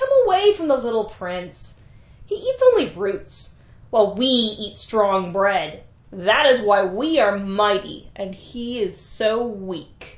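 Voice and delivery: taunting, laughing scorn. Malamu, Lugalbanda's brother, speaks up in front of Ninsun: laughing, mocking. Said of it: "laughed and said".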